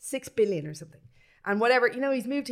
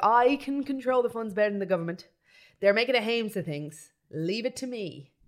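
ordinary talk, nothing marked

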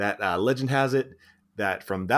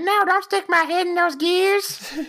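put-on squeaky, very high-pitched baby doll voice; 4 dB louder than usual. Retelling a scene where a character voices a baby doll, in baby doll voice. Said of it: "he does this baby doll voice".

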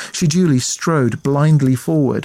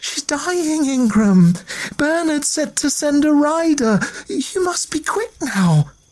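very high voice, shivering and shaking; 13 semitones higher than usual. Reading a novel, a woman out in the cold answers a man, shivering.

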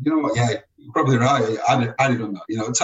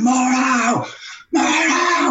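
very shrill, high, drawn-out shriek; 13 semitones higher than usual. Retelling how one man screamed at Darren for ages: imitating Ego screaming. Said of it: "Ego was screaming at him for ages".

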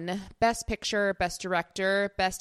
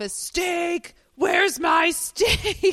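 put-on, shrill, very high, drawn-out yell; 10 semitones higher, 6 dB louder than usual. Retelling how a man yelled out of his office, imitating someone yelling. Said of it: "he's like yelling out of his office".

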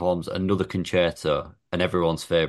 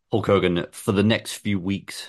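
ordinary talk, nothing marked

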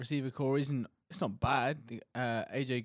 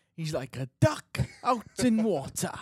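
terrible, raised, put-on Welsh accent; 7 semitones higher, 6 dB louder than usual. Talking about a coveted wide receiver, in an awful put-on Welsh accent. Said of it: "Will's awful Welsh accent there".

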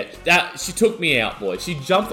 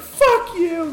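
put-on yell, much higher and louder; 4 dB louder than usual. Recounting a shove on a packed dance floor, the speaker retells her yell. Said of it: "She's yelling out to me".

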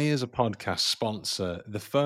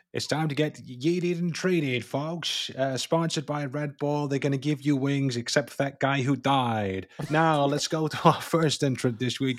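put-on old New York reporter voice; 4 semitones higher than usual. A host introduces the week's contest entrants, in an old new york reporter voice. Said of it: "I don't know why I speak like an old like New York reporter".

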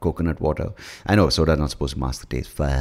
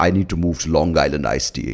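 imitated drunk voice. Retelling a drunk friend's drink order: imitating Arjun's way of speaking. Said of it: "and he speaks like this".

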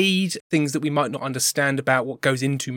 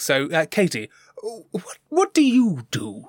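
posh, royal-sounding queen voice, slower; 8 semitones higher than usual. Asking a guest what she does, speaking in the posh queen voice the listener just remarked on. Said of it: "Imagine I'm the queen".

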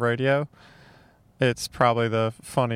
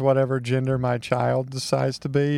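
ordinary talk

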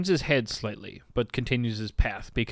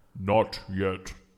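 guttural stone creature voice, lower and quieter; 4 semitones lower, 4 dB quieter than usual. Voicing a stone guardian that refuses a massage room: guttural stony golem voice. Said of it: "a guttural, sort of stony mouth make noises".

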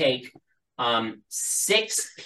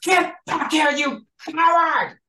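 very high-pitched, shrill, loud yell; 6 dB louder than usual. A general yells after someone running away; yelling. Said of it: "the general just yells".

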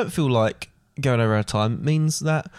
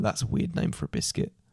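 soft, whispered, puzzled remark. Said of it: "they go".

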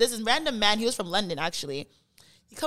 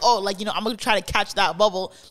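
ordinary talk

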